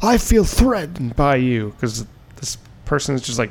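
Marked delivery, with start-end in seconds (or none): 0.0-1.7 full-on outburst, loud and high-pitched yelling. Retelling a guy told to put a mask on, retelling his yelling. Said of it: "the guy's just like yelling".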